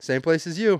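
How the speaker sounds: mock sarcastic tone. Retelling how he answered a guy's question, acting out a sarcastic reply. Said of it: "And I sarcastically said".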